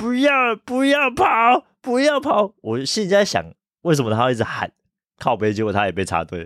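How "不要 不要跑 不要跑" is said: very high, very slow, drawn-out calling shout. Retelling what a coworker kept yelling in a line: imitating someone shouting. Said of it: "他就一直在大喊".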